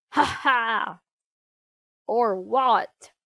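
loud, roaring villain's ha-ha chuckle. Bad Bart answers Chuck's demand to let his pa go; chuckling. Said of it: "He chuckled".

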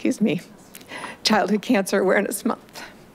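crying while speaking. Reading the yearly proclamation in the chamber, crying while speaking.

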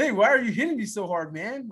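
put-on goofy surfer boy voice. Retelling what a choking man said while being hit, goofy little surfer boy voice. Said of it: "his little goofy little surfer boy voice".

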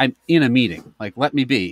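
ordinary talk

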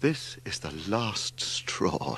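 soft, slow, trembling, unsteady voice. Reading a character's line in a story, in a shaking voice. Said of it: "said Larry in a shaking voice".

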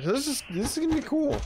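voice breaking upward. Player commenting while playing a game, voice cracking. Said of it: "As my voice cracks".

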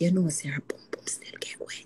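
soft, low whisper under the breath.

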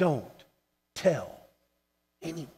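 play-acted, stern preacher voice. Acting out Jesus warning the healed man, finger raised: stern, as Jesus. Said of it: "the Bible uses the word stern".

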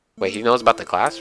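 ordinary talk

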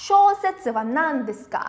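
ordinary talk

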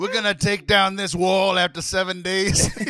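badly done, fake Italian mob boss accent. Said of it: "That's my very bad Italian mob impression".

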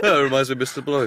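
high, rushed, nervous, hurried voice. Imitating a sweating friend remembering Mister Blobby: imitating nervous Phil. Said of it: "bead of sweat form on Phil's forehead".

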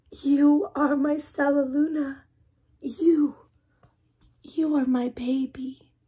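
whispering. A mother bat speaks to the child she has found, whispered. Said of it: "She whispered".

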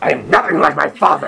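really angry, loud, raw and rough voice. Doing a second take of a line, told to pretend to be real mad. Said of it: "Pretend like you're real mad".

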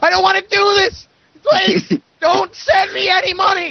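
very high-pitched, stretched-out, drawn-out screaming. Imagining the listener in front of a camera for a charity drive, mock screaming. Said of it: "just screaming like".

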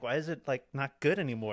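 normal talking voice

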